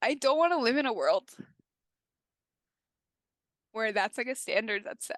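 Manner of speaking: tearful voice, on the verge of tears. In conversation, speaker says she is going to cry again, on the verge of tears. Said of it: "I'm gonna cry again".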